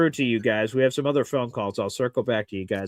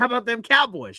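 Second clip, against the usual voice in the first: high-pitched coach voice, way up; 11 semitones higher than usual. Coaching a friend on a catchphrase, speaker does a Jimmy Johnson impression. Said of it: "you got to deliver the line".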